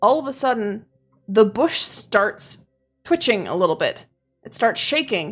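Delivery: ordinary delivery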